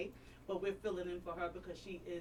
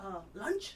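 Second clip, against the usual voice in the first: high-pitched, fast, eager tone. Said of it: "She said".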